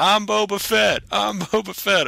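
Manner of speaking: put-on very high, sloppy, drawn-out drunken shouting. Retelling how a drunk man at a convention kept shouting: imitating a drunk man yelling. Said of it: "drunk, just yelling".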